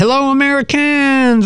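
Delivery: mock, very high, loud call from afar. Narrator retelling a voice calling to them from the dock, loud call from the dock. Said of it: "A loud voice calls from the dock".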